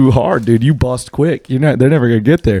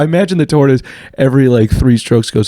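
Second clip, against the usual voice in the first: ordinary talk, nothing marked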